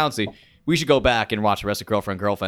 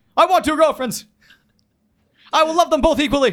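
very high, loud, blunt scream; 4 dB louder than usual. Impersonating a character from the show who talks in screams. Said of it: "That's a very good impression".

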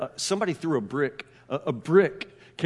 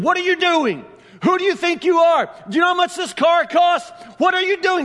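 put-on scream, higher and louder; 7 dB louder than usual. Retelling a story where a man grabs a kid: imitating a man screaming. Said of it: "Just screaming at this kid".

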